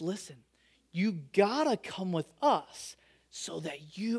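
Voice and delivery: play-acted, dead serious, low, hushed voice with slight shake. Retelling the sister urging a Disney trip, imitating a dead-serious shaky voice. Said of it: "dead serious with like almost a shake in her voice".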